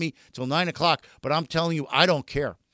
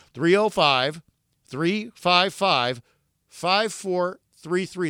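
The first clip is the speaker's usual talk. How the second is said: drawn out very slowly and deliberately. Speaker gives the phone number to Jets fans, said slowly. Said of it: "I'm going to say it slow".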